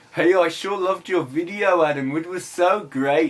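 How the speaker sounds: put-on strong Birmingham accent. Speaker quoting a man who praised his video, put-on strong birmingham accent. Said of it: "he's got this strong Birmingham accent".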